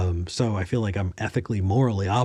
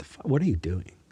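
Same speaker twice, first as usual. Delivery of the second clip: mock deadpan, said dead straight. Imagining confronting an old teacher as an adult: mock deadpan. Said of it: "look at your teacher deadpan and be like".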